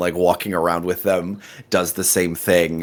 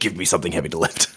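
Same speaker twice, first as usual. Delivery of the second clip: put-on frantic voice. Acting out what he says when he wants a task, mock-frantic. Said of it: "probably more in a more frantic tone".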